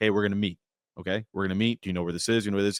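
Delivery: low, flat, level, unvarying monotone. Describing how Anthony spoke while arranging to meet: Anthony's monotone.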